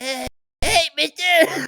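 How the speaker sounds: put-on grown man's squeaky kid voice, very high. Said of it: "You you sound like I'm the best detective".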